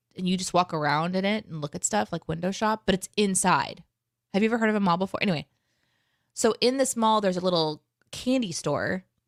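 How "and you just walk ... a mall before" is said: normal talking voice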